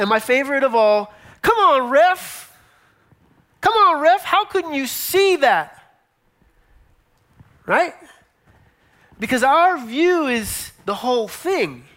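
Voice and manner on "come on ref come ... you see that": yelling, pitched high. Acting out a fan at the tv, now at the ref: imitating yelling at the ref. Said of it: "you're yelling at a player".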